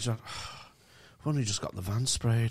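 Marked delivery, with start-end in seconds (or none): 1.3-2.5 put-on flat, humourless deadpan delivery. Retelling what a man with no sense of humour said, in a mock humourless deadpan. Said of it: "sense of humour or irony".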